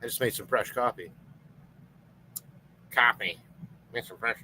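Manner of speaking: soft, whispered North Dakota or Fargo accent. Mentioning fresh coffee just made, in a Fargo accent. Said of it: "I sound like I'm from Fargo all of a sudden".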